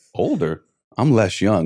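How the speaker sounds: plain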